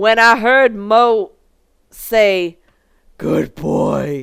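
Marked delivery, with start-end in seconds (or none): 3.2-4.2 husky character voice, lower in pitch. Narrator reading a story, quoting what Mo said: husky voice. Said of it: "in a in a husky voice".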